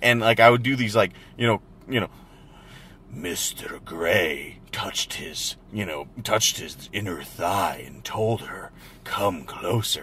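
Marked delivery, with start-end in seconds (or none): 3.1-10.0 breathy, seductive whispered voice. Retelling how he read aloud over his wife's shoulder: imitating his own seductive narration. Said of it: "start audio narrating it over".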